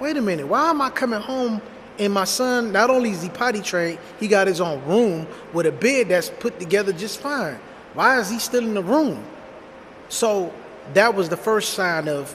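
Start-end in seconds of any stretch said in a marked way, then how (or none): none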